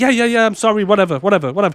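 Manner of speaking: blasé, unbothered, dismissive tone. Retelling a show scene after a shooting: imitating Liz's blasé reply. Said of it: "She's just not arsed".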